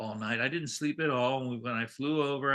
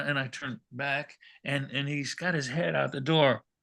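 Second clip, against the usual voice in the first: ordinary talk, nothing marked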